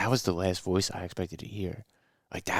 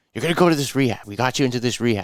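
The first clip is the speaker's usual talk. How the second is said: mock-aggressive, louder, higher pitch; 4 semitones higher, 8 dB louder than usual. Retelling his wrestling coach sending him to rehab, imitating aggressive coach talk. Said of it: "he talks real aggressive".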